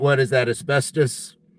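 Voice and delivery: normal talking voice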